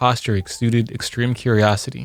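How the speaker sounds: ordinary delivery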